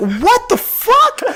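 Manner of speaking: very high, slow stunned disbelief. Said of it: "I was like".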